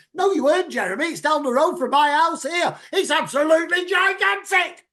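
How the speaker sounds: loud, high-pitched, ranting voice.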